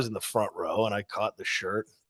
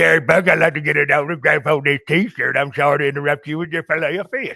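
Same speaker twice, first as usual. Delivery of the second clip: put-on toothless tough-guy voice, higher and louder; 5 semitones higher, 5 dB louder than usual. Retelling asking for an autograph at a drive-thru: toothless Stone Cold voice. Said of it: "Toothless Stone Cold took a shot before he ran up".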